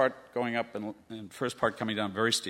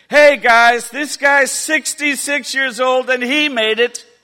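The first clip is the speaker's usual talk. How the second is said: very loud, very high, shrill, booming megaphone-style shout; 14 semitones higher, 14 dB louder than usual. Retelling how a teacher announced his age to a group: retelling a megaphone-style shout. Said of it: "as if he had a megaphone".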